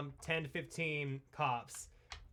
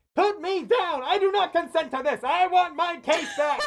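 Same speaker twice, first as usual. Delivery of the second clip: put-on yelling character voice, higher and louder; 12 semitones higher, 12 dB louder than usual. Voicing a character stuck in a bag, Wheatley yelling. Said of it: "Wheatley in the bag just yelling".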